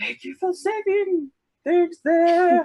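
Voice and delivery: whispered aside. Whispering thanks in character to a fellow player, Ace: whispering. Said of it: "whispering to".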